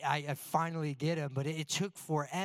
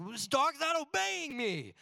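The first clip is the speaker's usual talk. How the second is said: mock, mounting, angry frustration, pitched up; 11 semitones higher than usual. Speaker retells calling a dog that won't obey; retelling getting angry. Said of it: "and I'm getting angry".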